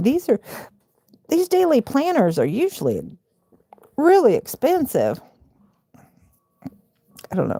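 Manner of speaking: talking through hiccups, voice slightly high. Speaker talking to viewers, caught by hiccups mid-sentence, hiccuping. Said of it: "I'm I'm hiccuping".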